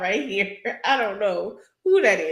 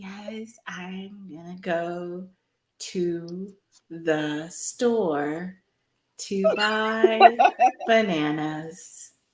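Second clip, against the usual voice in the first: very slow, put-on pageant-queen voice. Mocking a reality show contestant's fake way of talking: imitating slow fake pageant talk. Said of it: "Stop over here like".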